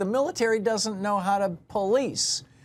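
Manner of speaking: very high, shrill shouting. Retelling watching a guest on morning TV: retelling own yell at the TV. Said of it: "And I'm yelling at the T V".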